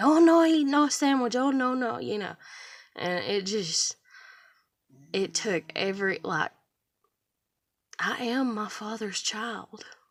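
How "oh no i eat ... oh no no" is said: heated, loud, high screaming in broken English. Retelling how a coworker yelled at them for eating: imitating someone screaming. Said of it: "they start screaming at me".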